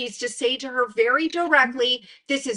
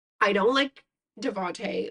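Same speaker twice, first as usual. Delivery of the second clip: plain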